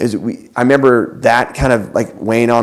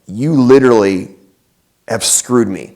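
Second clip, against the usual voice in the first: ordinary talk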